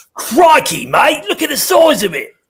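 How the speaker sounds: very high, loud, swooping exclamation, belted out. Imitating Steve Irwin: Steve Irwin impression. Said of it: "the Irwin guy".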